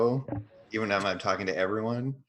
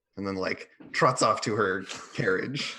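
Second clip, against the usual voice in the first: ordinary delivery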